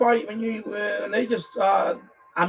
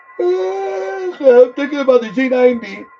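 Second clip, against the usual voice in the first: very slow drawl with words stretched mid-yawn; 4 semitones higher, 6 dB louder than usual. Describing plans for a separate station; talking through a yawn. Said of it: "sorry, I'm yawning".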